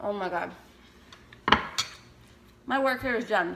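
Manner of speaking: speaking with mouth full of food. Taste-testing the finished dish for a video, talking with mouth full. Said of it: "Pardon my full mouth".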